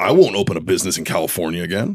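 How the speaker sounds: ordinary talk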